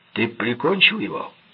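loud, high, blurted out all at once. A man confronts Jackson, blurting out. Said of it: "брякнул он".

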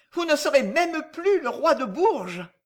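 outraged, indignant voice. Reading a story, a woman answers the king, indignant. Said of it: "lui dit Agnès Sorel indignée".

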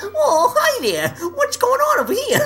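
shrill squealing voice.

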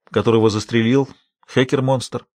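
ordinary delivery

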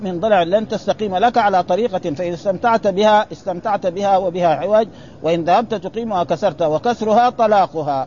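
ordinary talk

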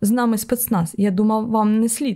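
ordinary delivery, nothing marked

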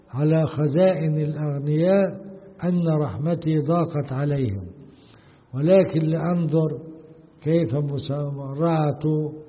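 ordinary talk

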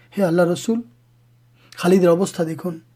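plain

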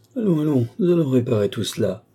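tender, kindly, affectionate tone. A stranger replies to two people as he shuts the door, affectionate. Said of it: "répondit affectueusement".

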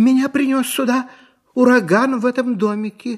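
shy, timid voice. A girl answers an old woman's question with a timid answer. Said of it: "робко ответила Элли".

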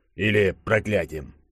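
ordinary talk

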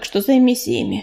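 ordinary delivery

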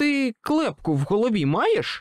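very high, stunned, shocked shouted outcry. The narrator confronts a figure who summoned a demon, a stunned shout. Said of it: "приголомшено крикнув я".

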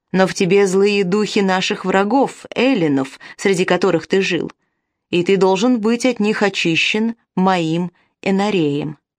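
ordinary delivery

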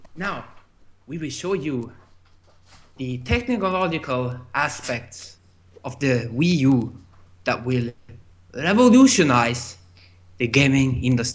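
put-on Chinese-sounding accent, low and quiet. Asked for his best Iwata impression, delivering a Chinese-sounding Iwata impression. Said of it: "That was also very Chinese".

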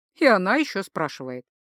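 usual speaking voice

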